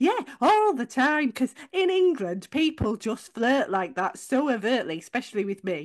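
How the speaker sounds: mock-agreeable, sing-song sarcasm with swooping pitch. Retelling own reply to a compliment about beautiful eyes: imitating own sarcastic reply. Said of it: "I think he did pick up the sarcasm".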